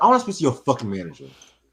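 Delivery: heated, fed-up, angry tone with cursing. Retelling a demand to see the hotel manager: imitating own angry demand. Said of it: "So I was mad".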